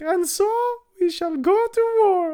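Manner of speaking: high, squeaky pirate voice.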